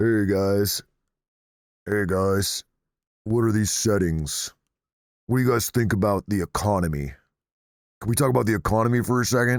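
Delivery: put-on deep voice. Told to speak with a lower voice, the speaker mocks the request; mock lower voice. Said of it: "Need to speak with a lower voice?".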